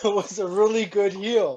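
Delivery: laughing while talking. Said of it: "is Putty laughing over here".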